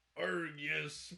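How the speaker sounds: put-on pirate voice. Voicing Josh for the other speaker: Josh's pirate voice. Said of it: "He talks like a pirate".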